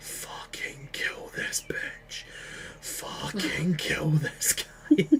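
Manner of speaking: slow, eldritch, eerie whispered voice. Player voicing his blade Chainbreaker whispering to him, Chainbreaker's eldritch whisper. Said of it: "I can hear the eldritch whispers of my blade".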